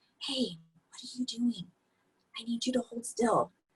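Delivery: very quiet, soft, hushed half-whisper. Showing how to talk to a wiggling toddler in a car seat: half-whispering. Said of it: "just start whispering".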